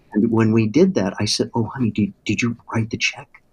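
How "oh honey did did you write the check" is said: imitated whisper. Retelling asking his wife at church about the check: retelling own whisper. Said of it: "I was whispering to her".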